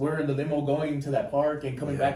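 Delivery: ordinary delivery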